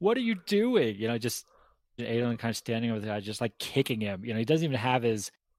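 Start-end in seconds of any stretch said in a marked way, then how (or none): 0.0-1.0 put-on very high, shrill screaming outburst. Retelling how the judge reacted to the beating: imitating the judge screaming. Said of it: "the judge is, like, screaming at him too".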